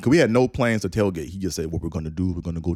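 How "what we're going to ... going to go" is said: put-on Caribbean accent, faster. Quoting what he said about their plans for the game: Caribbean accent. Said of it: "so I'm going to do the accent".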